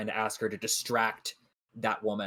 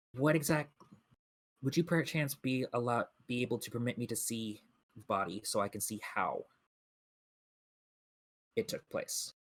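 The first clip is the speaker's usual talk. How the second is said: quieter, lowered, discreet voice; 6 dB quieter than usual. A player's character asking the mortician to see the body, in a quieter voice. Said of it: "in a bit of a quieter voice".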